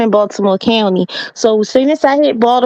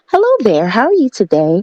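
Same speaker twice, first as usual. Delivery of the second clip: polite, formal voice with a swooping, rising-falling tune. Showing the voice she switches to when picking up the phone. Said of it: "I pick up the phone and I'll be like".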